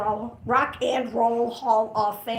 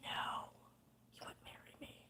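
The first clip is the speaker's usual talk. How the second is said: hushed whisper, much quieter. Recalling the man who turned down the marriage offer, whispering. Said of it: "I'm whispering because I'm offended still".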